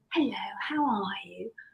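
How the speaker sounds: mock caring, heartfelt, compassionate voice. Retelling how the midwife greeted them at the door: imitating a sincere, compassionate tone. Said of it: "in such a sincere, compassionate way".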